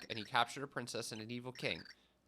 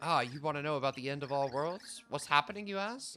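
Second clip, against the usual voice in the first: deliberately bad put-on British accent; 3 semitones higher, 4 dB louder than usual. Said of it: "We're doing some bad British accents".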